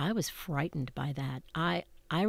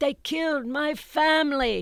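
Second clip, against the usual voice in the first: put-on yell, higher and louder; 10 semitones higher, 7 dB louder than usual. Retelling how a man in the audience started yelling: imitating a man yelling. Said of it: "a man in the, the mezzanine started yelling".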